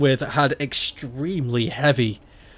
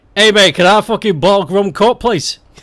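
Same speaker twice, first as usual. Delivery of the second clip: very loud, pitched-up, switched voice; 6 semitones higher, 8 dB louder than usual. Showing how they talk when turning from friends to the barman, switching into other voice. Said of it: "I'll turn to the barman and like".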